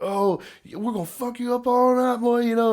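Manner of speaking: very high-pitched, taunting, running on. Retelling how a friend taunted the other football team: imitating hard trash talk. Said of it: "just trash talking hard".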